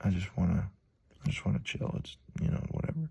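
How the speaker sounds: withdrawn, shut-down murmur.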